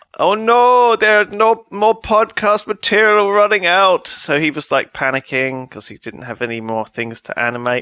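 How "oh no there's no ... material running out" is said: put-on Swedish accent, high, slow, unhurried and fretting. Retell a phone call from Fred, who does the animations, in Fred's Swedish accent. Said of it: "that was a Swedish accent".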